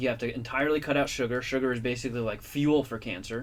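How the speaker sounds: normal talking voice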